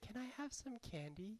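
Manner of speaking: very soft, sweet, sugary, high voice. Teacher recalling what she asked after not getting her way, imitating a sweet voice. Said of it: "in a sweet voice said".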